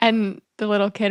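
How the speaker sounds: usual speaking voice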